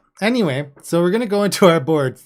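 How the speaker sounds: fast, loud, high overly excited voice. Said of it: "I got overly excited".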